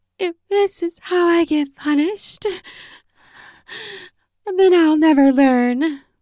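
very high, airy, breathy voice. Narrator reads a woman's reply to the narrator's stern question: breathy voice. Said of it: "her own voice breathy as she replied".

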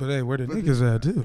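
whispered. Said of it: "leans in and whispers to me".

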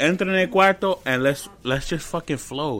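normal talking voice

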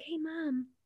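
soft, hushed half-whisper. Retelling a child's request at night: imitating a child half-whispering. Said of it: "she was whispering".

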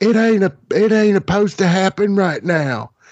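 very high, shrill, shouted-out yell. Retelling a fan at a wrestling show: imitating a fan yelling. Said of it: "this guy was yelling".

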